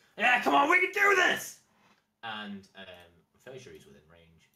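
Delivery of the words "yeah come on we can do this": shrieking, very high, very loud battle scream. A game master voices a prisoner rallying his fellow prisoners, screaming at top of voice. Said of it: "scream at the top of his voice".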